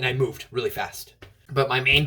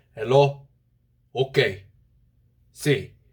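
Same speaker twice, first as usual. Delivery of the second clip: fatherly dad voice, brief phrases. Doing an impression of a dad answering in short sentences: impression of my dad. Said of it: "the only impression I can do of my dad".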